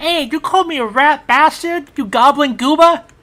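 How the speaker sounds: very high, loud, shrill, indignant and outraged yell. Retelling how a game character fires back after being called a name, mock-indignant retort. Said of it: "He goes".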